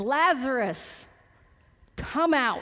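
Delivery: loud, carrying call-out. Retelling Jesus calling Lazarus out of the grave: loud voice. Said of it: "And in a loud voice".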